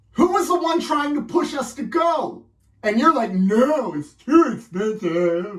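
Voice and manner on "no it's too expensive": very slow, clumsy, drawn-out, badly done mock voice. Imitating another speaker refusing to go: bad impression of a friend. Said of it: "I think that's a bad impression".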